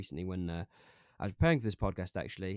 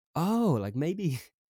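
loud, laughing through the words. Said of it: "I'm laughing now because it seems so laughable".

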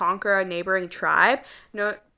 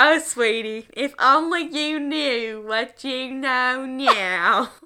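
put-on old southern grandma voice; 4 semitones higher than usual. Mocking a line that sounded weird, redo it in a southern grandma voice. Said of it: "He's like that southern grandma".

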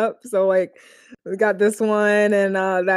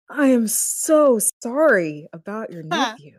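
put-on insincere, unconvincing sympathy, slow and sad. Imitating a character who feigns sadness badly: Zhao badly faking sadness. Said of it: "Zhao is so bad at pretending to be sad".

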